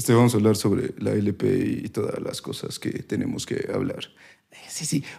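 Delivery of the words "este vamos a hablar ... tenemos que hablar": breathy, hushed, half-whispered delivery. Doing an impression of a friend who talks about medicine: imitating Víctor. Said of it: "ya sabe que yo lo imito".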